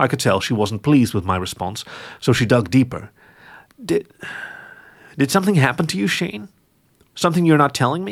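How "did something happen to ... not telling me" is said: uneasy, apprehensive, pitched-up probing tone. A woman pressing Shane about whether something happened to him, apprehensive tone. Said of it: "Her tone was apprehensive".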